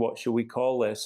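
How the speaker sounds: ordinary delivery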